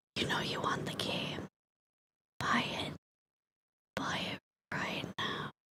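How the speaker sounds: hushed, coaxing, sweet whisper. Acting out Todd whispering sweet lies to buy the game: imitating Todd whispering. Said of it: "He's gonna whisper sweet, sweet little lies into your ear".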